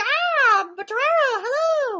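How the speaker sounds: very high, lively, all-over-the-place pitch. Showing how lively the speaker greets torero: imitating own lively greeting. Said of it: "I'm all over. I'm like".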